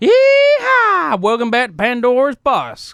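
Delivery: loud, hollered, swooping Southern drawl, stretched "yeehaw". Opening the show as stand-in host Cletus, Cletus Southern drawl voice. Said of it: "Southern Drawl Special".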